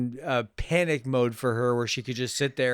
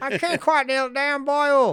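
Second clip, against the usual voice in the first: bad put-on Irish accent, slow, drawn out, very high; 13 semitones higher, 4 dB louder than usual. Trying out an actor's bad Irish accent: Tommy Lee Jones doing Irish accent. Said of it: "I'm trying to do Tommy Lee Jones doing an Irish accent".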